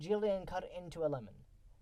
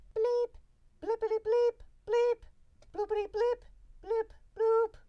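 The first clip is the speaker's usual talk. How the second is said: very high, very loud, very squeaky bleeps; 9 dB louder than usual. Narrator reads Margie's line to Jake, in a very squeaky voice. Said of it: "used a very squeaky voice to say".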